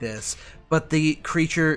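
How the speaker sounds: plain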